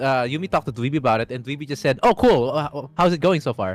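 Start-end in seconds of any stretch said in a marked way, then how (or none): none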